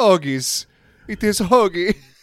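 put-on goofy Italian accent, high and slow. Explaining where a sandwich name came from, imitating Italians in a goofy Italian accent. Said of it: "they all had that goofy accent".

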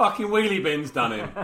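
mock, very loud, high jeer laughing through words. Retelling people opening the garage door on the speaker, imitating people laughing while talking. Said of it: "all laughing, going".

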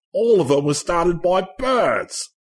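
terrible put-on Australian accent, high-pitched. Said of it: "forgive me for the terrible Australian accent".

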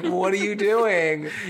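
put-on scream. Retelling reacting to a show with another viewer: retelling screaming at the TV. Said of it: "Alex and I are screaming at the T V".

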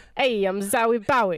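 Italian-American New Yorker accent. Asked to try the same accent with another name, Italian New York accent. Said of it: "Do that again, but say".

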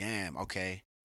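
ordinary talk

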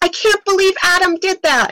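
very loud, shrill, high-pitched, full-throated shriek. Writer recalls stopping mid-typing over their main character: retelling a scream. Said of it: "I literally stopped and I screamed".

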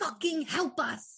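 hushed whisper. During a tabletop stealth scene, a player speaks for their character: whispering. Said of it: "Penny's gonna whisper".

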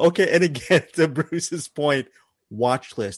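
words broken up by laughter and giggles. Getting back to a film recommendation after a joke, laughing while talking. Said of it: "I don't know why I'm laughing".

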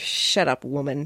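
put-on muttering under breath. Recounting what he muttered between takes, retelling an under-breath mutter. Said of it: "Under his breath".

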